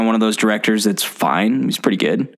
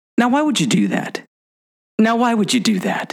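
very high, swooping pitch, seriously angry tone; 11 semitones higher than usual. Retelling a video where someone squirts water at him: imitating Tom Cruise getting mad. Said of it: "Tom Cruise kinda goes, and gets so serious".

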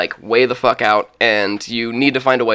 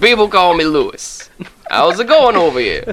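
put-on Louisiana accent, pitched high; 6 semitones higher than usual. Voicing a sailor who greets two players: louisiana accent. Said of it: "Is this a problematic voice?".

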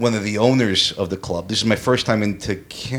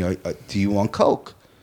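put-on testy, irritated, impatient, pressing tone; 3 semitones lower than usual. Retelling what a club owner asked, imitating an irritated club owner. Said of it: "he was getting irritated with me".

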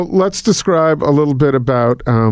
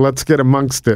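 ordinary talk, nothing marked

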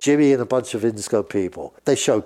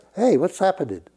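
put-on mafia-style voice, higher; 5 semitones higher than usual. Imitating Jimmy greeting people in a meeting: imitating Jimmy, mafia-like. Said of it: "he was like a mafia".

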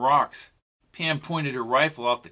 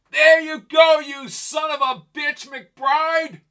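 full-throated, booming yell pitched very high; 14 semitones higher, 5 dB louder than usual. Reading a story, the narrator voices a character yelling out a train window: booming yell. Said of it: "He yelled in a booming voice".

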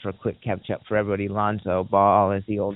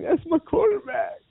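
mock crying, very high sobbing voice. Retelling a press conference moment, imitating T.O. crying. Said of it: "crying, and he's like".

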